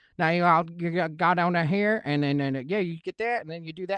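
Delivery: put-on Southern gentleman accent. Speaker recalling a trip near Nashville, imitating how Southerners talk, put-on Southern accent. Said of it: "any Southern gentleman or or or ma'am be like".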